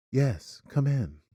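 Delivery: hushed, quiet, creepy and unsettling delivery. Describing how he answers the door, imitating him in a quiet creepy voice. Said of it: "like in this like quiet voice".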